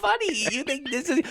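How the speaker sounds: put-on talking through laughter, very high pitch. Retelling what she said, the speaker imitates her laughing while talking. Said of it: "She starts like laughing".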